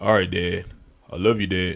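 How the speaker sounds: very low, very deep grown man voice. A father imitates his grown son on the phone, in a deep voice. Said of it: "he talk like this. He real deep".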